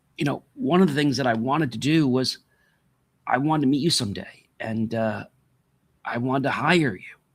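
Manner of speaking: tearful speech, talking through tears. Addressing someone whose mission they believed in, crying while speaking. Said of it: "I'm crying because".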